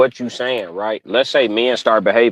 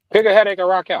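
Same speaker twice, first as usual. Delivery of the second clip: chewing fruit while talking, higher; 9 semitones higher than usual. Talking with others while chomping on fruit: eating while talking. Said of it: "Sorry if I'm chomping this fruit too hard".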